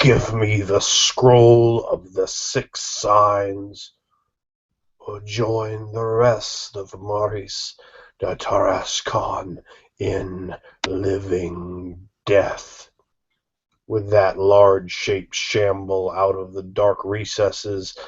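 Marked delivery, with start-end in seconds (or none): 0.0-12.9 cold, rasping, raspy voice. Voicing the undead lord who welcomes the players: cold rasping voice. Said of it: "intones the figure with a cold, rasping voice".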